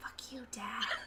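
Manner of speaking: quiet, mumbled mutter under the breath. Playing Isabel, who answers her dad, muttered under breath. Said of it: "She does mutter under her breath".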